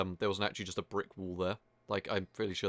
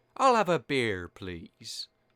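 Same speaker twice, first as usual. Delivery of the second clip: very slow, swooping, feminine-sounding voice; 3 semitones higher, 6 dB louder than usual. Comparing a character's beta voice line to the final version; womanly voice. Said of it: "in like a more womanly voice than that".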